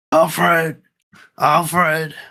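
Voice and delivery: calling out, sounding lost. Asked for the rain-scene impression, doing Batman calling for Alfred. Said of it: "do your impression of him in the rain calling for Alfred".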